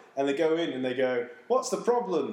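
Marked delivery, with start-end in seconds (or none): 1.5-2.3 put-on Jamaican accent, character voice. Retelling a show episode, the band answers the officer's call, in the characters' accent. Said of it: "In their accent".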